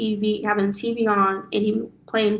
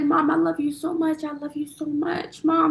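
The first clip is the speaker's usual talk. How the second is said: imitated crying child voice, higher pitched; 7 semitones higher than usual. Retelling her son waking from a bad dream: imitating her son crying. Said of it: "He just crying drastically".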